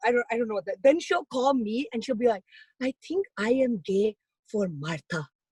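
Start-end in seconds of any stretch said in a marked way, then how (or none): 2.8-5.3 put-on romantic tone, quieter. Retelling a mother's phone call about a crush: imitating mom's romantic voice. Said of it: "she does get this, like, very romantic sound in her voice".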